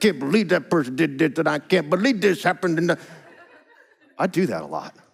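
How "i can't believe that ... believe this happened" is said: put-on mumbling, muttered under breath. Acting out own habit of complaining: imitating mumbling under breath. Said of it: "I'm just mumbling under my breath".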